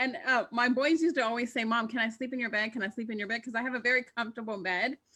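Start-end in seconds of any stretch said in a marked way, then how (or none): none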